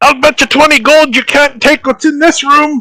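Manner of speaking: very high, loud yelling shout. Narrator voices Jim Jar calling from the bottom of the steps, shouting from below. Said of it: "Because he's shouting!".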